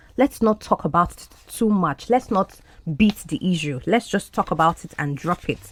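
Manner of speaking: ordinary talk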